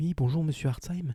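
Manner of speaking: mock-sugary, syrupy voice. Retelling a phone call from a young lady at the court, imitating her honeyed voice. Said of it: "avec une voix toute mielleuse".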